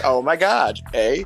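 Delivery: put-on valley girl accent. Talking about doing women's voices, demonstrate a Valley Girl voice. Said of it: "that sort of Valley Girl thing".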